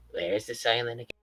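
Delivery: very soft, quiet, gentle, mild tone. Retelling what he asked one of their dear friends, very soft tone. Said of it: "in a very soft tone".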